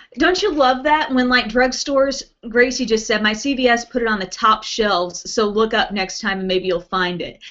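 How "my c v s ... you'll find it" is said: usual speaking voice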